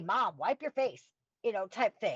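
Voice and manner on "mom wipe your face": ordinary delivery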